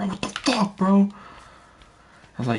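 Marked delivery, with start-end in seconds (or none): 0.0-1.1 angry, very high, pissed-off cry. Retelling how a guy reacted after losing his balance, imitating someone pissed off. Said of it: "And he got pissed".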